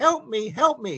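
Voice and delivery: drawn-out, very high, slow squeaky voice. Retelling a voice a psychic heard calling for help, squeaky voice. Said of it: "a squeaky voice".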